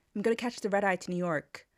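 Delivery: decent, passable North American accent. Example sentence using the term red eye, in an american accent. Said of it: "I think that was an okay accent".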